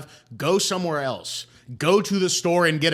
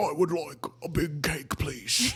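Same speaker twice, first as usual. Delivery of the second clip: put-on very slow, drawn-out old British man voice; 5 dB quieter than usual. Imitating how customers sound ordering: old British guy voice like Timothy Spall. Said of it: "They sound like an old British guy".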